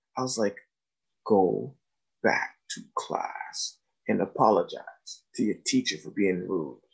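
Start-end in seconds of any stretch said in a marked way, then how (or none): 1.3-6.7 low, soft leaned-in whisper. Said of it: "like, whispering".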